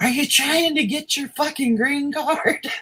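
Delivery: play-acted, all-out, very high, shrill scream. Retelling screaming at a doctor checking for a concussion: imitating own loud scream. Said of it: "I screamed as loud as I could".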